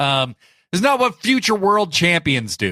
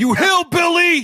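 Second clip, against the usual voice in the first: put-on yelling, higher pitch. Retelling a wrestler yelling insults at J R: imitating Taz yelling. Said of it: "just yell random shit at him".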